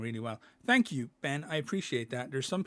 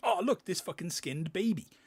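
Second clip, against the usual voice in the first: high, thrilled, super-excited voice; 6 semitones higher than usual. Speaker showing the way they don't want to voice the game: mock super excited. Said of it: "I don't want to do me like super excited".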